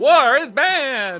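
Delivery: very high, loud, squealed, stretched-out robot voice. Signing off with good night to everybody, a host quotes Alpha: Alpha from Power Rangers voice. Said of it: "pretty good Alpha impression".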